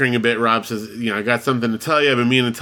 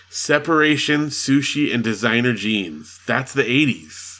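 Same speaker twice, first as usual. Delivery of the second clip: plain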